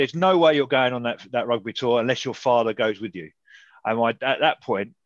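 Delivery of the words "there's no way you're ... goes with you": ordinary talk, nothing marked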